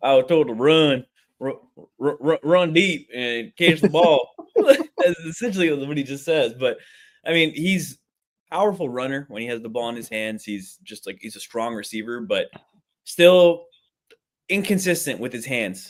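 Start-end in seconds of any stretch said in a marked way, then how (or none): 0.0-4.3 put-on thick country accent, higher, slower. Mocking how a receiver sounds when he talks, Forrest Gump country accent. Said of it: "Thickest thickest country accent I've ever heard".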